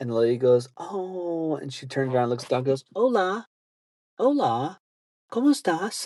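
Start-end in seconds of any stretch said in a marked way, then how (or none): 2.9-6.1 mock attempt at Spanish, higher. Retelling a lady talking to dogs: imitating someone trying Spanish. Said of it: "trying to speak Spanish to these dogs".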